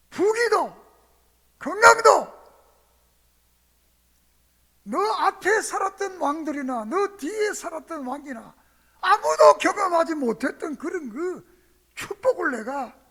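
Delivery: loud, high, astonished voice.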